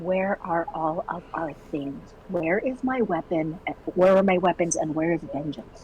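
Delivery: very soft whispering. Waking a companion and whispering questions to her: soft whisper. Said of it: "She's going to whisper to her very softly".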